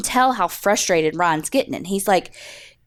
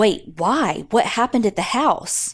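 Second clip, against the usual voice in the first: mock concern, put-on worried tone. Retelling how a man answered police questioning, imitating genuine concern. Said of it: "seems so genuinely concerned".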